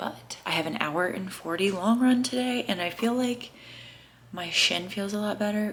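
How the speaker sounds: half-whispered, very quiet, barely audible. Talking while someone nearby is still sleeping, half-whispering. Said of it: "I'm whispering because Jordan's still sleeping".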